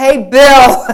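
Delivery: very loud, high, gracious southern yell. From the top of an escalator, the speaker calls down to a man: retelling a southern yell. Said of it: "I yell from the top of the escalator in my most southern way".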